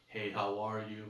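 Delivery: very slow, calm, low, relaxed and controlled. Describing how a fragrance comes across, speaker demonstrates a greeting, very slow, calm, relaxed. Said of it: "you're gonna be speaking very slowly, calm, controlled, relaxed".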